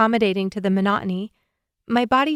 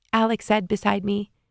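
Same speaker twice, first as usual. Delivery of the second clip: plain reading voice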